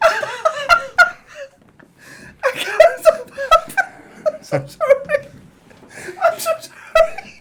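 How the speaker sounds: talking through laughter. Apologizing while the others laugh along, talk while laughing. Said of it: "why are you laughing as well?".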